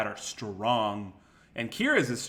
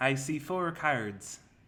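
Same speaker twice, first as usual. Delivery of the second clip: attempted Dublin Irish accent, changed voice; 3 semitones higher than usual. Practising an accent, the speaker repeats the phrase they were told to say: attempted irish accent. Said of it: "You're changing your voice though".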